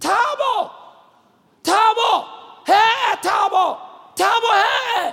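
very high, very slow, drawn-out loud screams. Retelling a young man in a hospital ward waking at night: imitating someone screaming.

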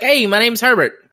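put-on New York accent. Imitating a plant character introducing himself, New York accent. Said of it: "a New York kinda accent".

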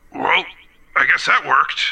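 sort of mechanical, robotic machine voice. Narrating a scene, voicing a machine that turns and speaks, in a mechanical voice. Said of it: "in sort of a mechanical voice".

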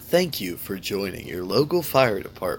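terrible, bad commercial announcer voice. Joking about joining the fire department, in a commercial announcer voice. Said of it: "That's my commercial voice".

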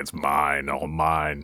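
very deep, slow, drawn-out, menacing sinister voice. Retelling how Scott gloats over a pot of gold, putting on a sinister voice. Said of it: "he speaks with this sinister voice".

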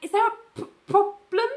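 very high, put-on terrified stammering squeak. Retelling a scene where a character is confronted: imitating terrified Ali. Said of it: "Really terrified".

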